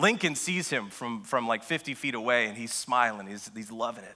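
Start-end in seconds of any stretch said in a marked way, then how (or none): none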